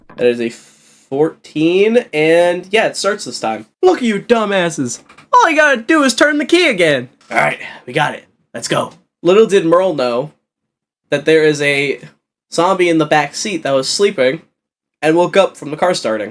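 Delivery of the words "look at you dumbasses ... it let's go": put-on old-fashioned character voice, pitched up, swooping high and wide. Game master voices Merle in a zombie game after the car starts: Merle character voice. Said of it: "Sorry about my brother. He's, uh, old fashioned. / Sorry about my brother".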